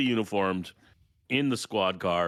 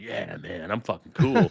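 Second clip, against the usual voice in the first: laid-back, casual, playing-it-cool put-on cop voice; 3 dB louder than usual. Retelling how a waiter said the tab was paid: imitating acting like an undercover cop. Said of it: "I'm acting like I'm an undercover cop going".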